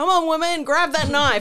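very loud, high hollering yell. Recounting what someone yelled while watching a scene, retelling a yell. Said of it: "Isla just starts yelling".

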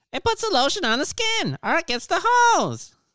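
very high cartoon voice, swooping around. Asked to say a line in SpongeBob voice: SpongeBob voice. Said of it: "In your SpongeBob voice".

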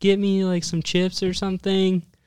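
high, loud, mock child's yell. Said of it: "she starts, like, yelling out the window".

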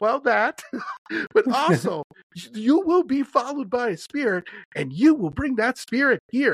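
put-on high, insistent, adamant older Southern woman's voice. Retelling what an older southern woman warned after a night walk: imitating an older southern woman. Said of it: "And she goes".

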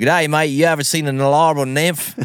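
put-on Australian accent. Trying out an accent during a story set in australia: australian accent. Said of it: "I better try my Australian accent".

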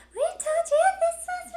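very high, loud, eerie put-on creepy voice. Speaker quotes her going into her creepy voice, creepy voice. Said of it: "into her creepy voice and she's like".

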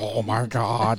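deep, demonic, possessed voice. Telling about the first time they were together, imitating her deep possessed voice. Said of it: "her voice got deeper than mine".

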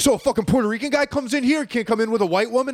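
high-pitched, outraged, freaking-out rant. Retelling a customer's reaction at work: imitating someone freaking out. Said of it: "The dude's freaking out".

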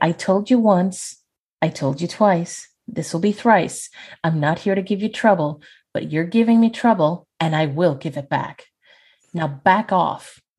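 courteous, calm, polite, even-tempered voice. A player voices her character telling a ghost to back off, polite and calm. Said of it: "a very polite and calm middle finger".

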